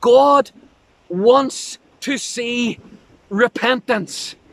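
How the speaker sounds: repentance stressed and drawn out slowly. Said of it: "I want to emphasize this word".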